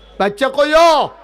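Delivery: loud, high-pitched shouting.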